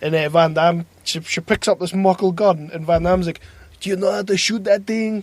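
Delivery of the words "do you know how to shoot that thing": put-on spoken in an American accent. Retelling a movie scene where Van Damme questions a woman, as Van Damme with American accent. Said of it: "with his American accent".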